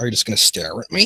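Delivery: ordinary delivery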